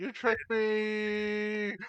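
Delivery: shrill, high, loud outcry with me stretched long. Playing a character stabbed with a flaming scimitar: yelling out. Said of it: "I yell out".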